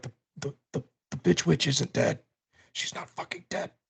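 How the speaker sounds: hushed whispered aside. A player has their character warn another character in secret: whispering. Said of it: "I'm gonna whisper to Garrison".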